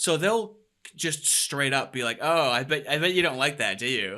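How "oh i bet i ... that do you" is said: snide, needling, sarcastic, backhanded taunt. Imitating a taunting remark described as antagonizing: imitating a sarcastic, backhanded tone. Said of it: "sarcastic and backhanded".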